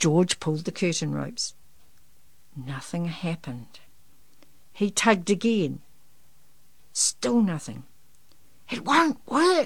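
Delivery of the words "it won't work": loud stage whisper, high pitched. Narrator reads a character's line to the teacher, in a loud whisper. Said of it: "he said in a loud whisper".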